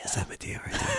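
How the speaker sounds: mock whispering. Retelling what actors on set said about Madea: imitating actors whispering. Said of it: "the actors were kinda whispering, going like".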